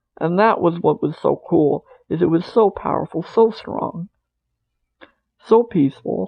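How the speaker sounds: choked up, on the edge of tears. Speaker recalling a personal experience, near tears. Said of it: "I'm kind of crying without crying here".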